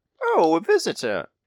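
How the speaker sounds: put-on older woman's voice. Game master voicing whoever answers when a player knocks: older female voice. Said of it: "A older female voice".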